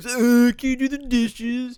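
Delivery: very high, loud, dopey, drawn-out dumb voice. Imitating mom asking to do the dishes, imitating mom in a dumb voice. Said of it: "But in my head, it was".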